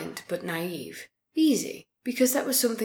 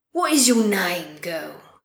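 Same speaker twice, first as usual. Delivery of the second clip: loud, booming preacher delivery; 5 dB louder than usual. Narrator reading a story, the preacher asks a girl her name: booming. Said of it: "the preacher boomed".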